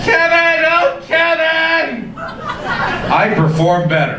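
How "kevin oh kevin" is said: high, drawn-out, passionate cry. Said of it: "when I hear my name being yelled".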